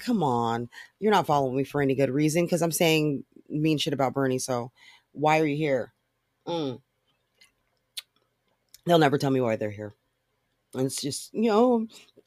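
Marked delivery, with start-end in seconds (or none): none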